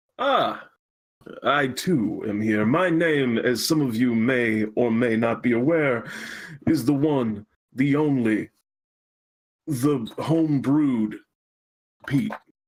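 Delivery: very slow, drawn-out put-on character voice. A co-host introduces himself at the start of a stream, in a slow put-on voice. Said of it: "doing these slow voices".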